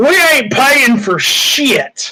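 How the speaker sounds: defiant, high, mild yelled tone. Narrating a scene, the boat answers a demand to pay for damages, yelling. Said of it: "you hear the boat start yelling".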